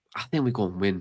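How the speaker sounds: ordinary talk, nothing marked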